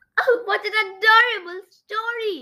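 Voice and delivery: high, drawn-out, delighted joyful squeal. The queen, having just heard the story, squealing with joy. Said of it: "squealed with joy / she cried".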